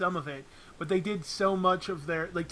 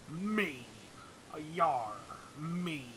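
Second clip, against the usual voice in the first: very slow stock pirate voice; 3 semitones lower, 9 dB quieter than usual. Joking about a game character, the speaker slips into a stereotypical pirate voice. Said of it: "I went into my stereotypical pirate voice there".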